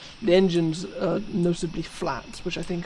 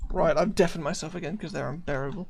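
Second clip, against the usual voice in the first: usual speaking voice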